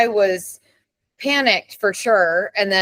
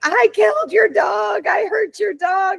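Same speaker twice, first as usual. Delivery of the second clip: mock sobbing, distraught, very high and drawn out; 12 semitones higher than usual. Retelling a man who got out of his car, imitating him crying. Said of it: "he's crying".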